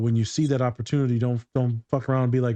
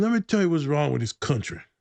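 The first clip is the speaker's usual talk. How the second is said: put-on drunk man voice, higher pitch; 3 semitones higher than usual. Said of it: "who's definitely a little drunk".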